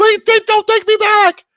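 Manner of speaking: very high, drawn-out, dragged yelling. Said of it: "she's yelling".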